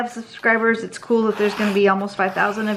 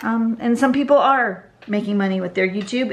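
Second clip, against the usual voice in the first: normal talking voice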